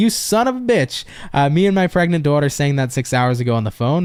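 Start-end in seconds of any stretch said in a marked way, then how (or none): none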